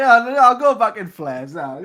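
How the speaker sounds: put-on very loud, high-pitched, drunken voice. Imagining the Doctor on a night out in London, drunk Doctor impression. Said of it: "the Doctor is shit-faced drunk".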